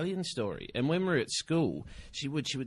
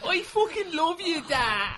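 put-on crying Irish accent, very high, drawn out; 6 dB louder than usual. Taking up another speaker's joke, mock crying in an Irish accent. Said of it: "start crying in an Irish accent going".

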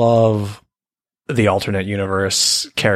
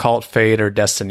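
usual speaking voice

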